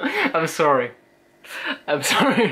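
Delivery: talking through helpless laughter, pitch swooping. Apologizing to the other speaker for a reaction: laughing while talking. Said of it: "I just can't stop laughing".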